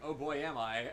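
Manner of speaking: ordinary talk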